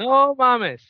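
sudden high, loud shocked outburst.

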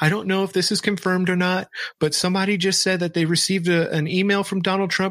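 acted hysterical sobbing through every word, high-pitched. Retelling a girl's webcam video, the speaker imitates her hysterical bawling. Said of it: "hysterically bawling into her fucking webcam".

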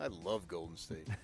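flat, unenthused. Sports show co-host answering a question about a team, with no enthusiasm. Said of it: "They said that with no enthusiasm whatsoever".

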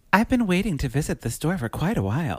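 high, fancy put-on voice. Performing a character bit in a put-on voice: fancy, classy Beth Broderick voice. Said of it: "I'll say it in my Beth Broderick voice. Very fancy and classy and wonderful".

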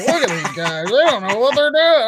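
put-on drunken voice, pitched high. Imitating Chris Collinsworth calling a Sunday night game: sixth-scotch voice. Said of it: "I'm on my sixth scotch kind of voice".

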